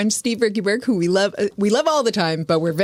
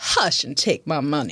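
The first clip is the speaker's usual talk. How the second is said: put-on Southern Georgia accent; 3 semitones lower than usual. Reading Chris's chat room comment aloud in a put-on best Georgia accent. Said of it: "in my best Georgia accent".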